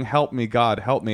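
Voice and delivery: normal talking voice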